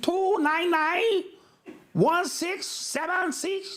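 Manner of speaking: slow, high-pitched, put-on Chinese accent. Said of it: "in the Chinese voice".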